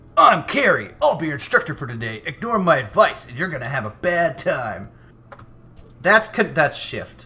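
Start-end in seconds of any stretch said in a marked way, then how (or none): 0.2-4.9 manly instructor voice, spoken like a man. Imitating the game's instructor Carrie, who sounds like a man: imitating Carrie with a man's voice. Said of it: "She's got a man's voice to me".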